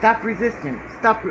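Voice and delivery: ordinary talk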